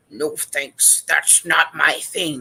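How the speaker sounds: very loud, creepy put-on voice. Demonstrating ways to say no to a request, in a very creepy voice. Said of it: "you can even try it in a very creepy voice".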